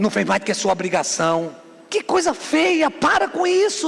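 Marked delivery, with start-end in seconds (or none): 0.0-1.5 low, quick, dismissive, belittling tone. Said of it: "não diminui".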